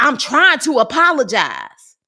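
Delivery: put-on, loud, swooping, combative, aggressive tone. Quoting what she said to him while apologizing: mock-aggressive. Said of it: "and was getting aggressive".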